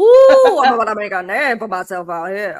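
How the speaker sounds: put-on loud, sing-song Cajun accent with swooping pitch. Asked about Deadpool and Wolverine, speaker does the Gambit sound bite, Gambit impression. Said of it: "The sound bite of Gambit".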